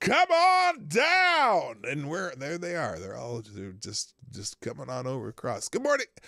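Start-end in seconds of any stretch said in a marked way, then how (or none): 0.0-1.8 very high, drawn-out, booming game-show announcer voice. Comparing a president to a game show announcer: The Price Is Right announcer voice. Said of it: "the announcer at The Price is Right, where he just said".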